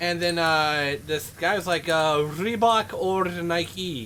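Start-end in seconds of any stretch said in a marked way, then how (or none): 2.2-4.1 put-on heavy Latin accent, laid on thick. Retelling a radio caller's request to the dj, in a thick latin accent. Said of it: "in this thick, you know, Latin accent".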